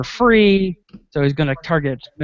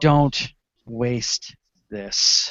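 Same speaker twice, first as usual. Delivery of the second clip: voice gone somewhat feeble and a little weaker; 4 semitones lower, 3 dB quieter than usual. Game master voicing a character who looks at the players, in a weaker voice. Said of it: "in a little bit of a weaker voice".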